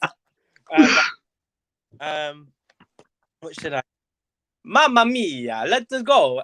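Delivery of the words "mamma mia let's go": high, very slow, stretched-out Italian accent. Recording a sound file to use as a ringtone, in a Mario voice. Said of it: "Oh, I sound like Mario".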